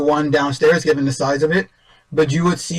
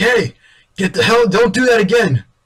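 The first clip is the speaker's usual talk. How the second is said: furious, angry yelling, pitched high; 6 semitones higher, 4 dB louder than usual. Describing climbing up to a balcony, acting out people below, imitating people yelling. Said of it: "people like kind of like yelling up to you like".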